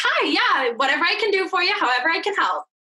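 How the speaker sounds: sugary, sweet, helpful customer-service phone voice. Explaining how to soothe people who expect a certain way, customer service voice. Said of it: "boomers expect a customer service voice".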